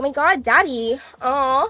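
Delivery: slow, put-on cutesy little girl voice. Speaking to viewers, showing the character for girlfriend-experience content: fake little girl voice. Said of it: "that fake little girl".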